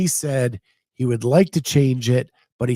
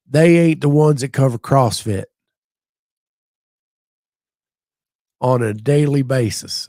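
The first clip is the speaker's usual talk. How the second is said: put-on slow, unhurried Cajun drawl; 4 dB louder than usual. Translating a phrase for another speaker: put-on Cajun accent. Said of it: "in Cajun".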